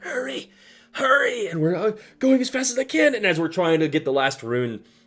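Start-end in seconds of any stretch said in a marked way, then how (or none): 0.0-1.5 piercing, very high, shrill shrieking voice. Retelling a tabletop game scene, voicing the student in a shrieking voice. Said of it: "in this shrieking voice like".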